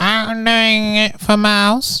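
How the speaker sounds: put-on granny accent, high, very slow, drawn out. Acting out an imagined old granny cook, mocking a grandma's accent. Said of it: "What accent is that, bruv?".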